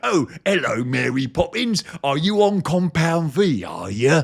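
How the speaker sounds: put-on ridiculous, full-on cockney accent, laid on thick.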